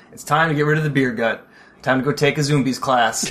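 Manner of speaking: plain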